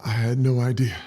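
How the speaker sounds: overcome with emotion. Speaker, moved in the moment, says this while getting emotional. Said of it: "I'm just getting emotional".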